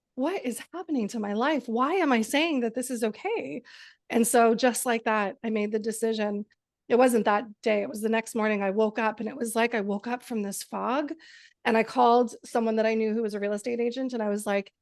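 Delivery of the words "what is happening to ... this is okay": acted, tearful, speaking through sobs. Retelling talking to oneself in the mirror: reenacting tearful words. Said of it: "I was bawling and crying".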